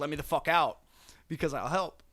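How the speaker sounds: wild, frantic, panicked screaming. Retelling a comic scene, a captive screams at the door: imitating a screaming prisoner. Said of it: "he just starts screaming at the fucking door".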